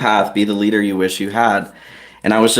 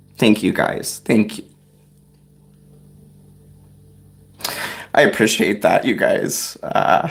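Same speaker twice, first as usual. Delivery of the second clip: emotional, teary, choked-up voice; 4 dB quieter than usual. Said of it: "I feel weird getting emotional on camera".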